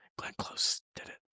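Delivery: hushed, secretive whisper. Retelling a whisper to a roommate in the theater: imitating a whisper. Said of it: "whispered to George, like".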